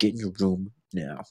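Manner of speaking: seething, low, furious little half-whisper. Recalling how an angry father ordered a child to their room, retelling a little half-whisper. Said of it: "he'd do the little whisper".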